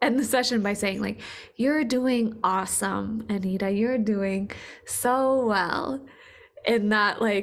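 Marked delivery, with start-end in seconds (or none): 1.5-6.0 put-on extremely kind, motherly voice. Retelling how Sandra ended sessions, imitating Sandra's extremely kind, motherly way. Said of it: "extremely kind, motherly way that you do".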